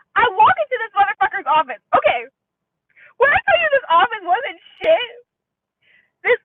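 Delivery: worked-up, loud, high-pitched yelling rant. Telling a story about walking into a man's office, the speaker is yelling. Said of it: "I'm sorry I'm yelling".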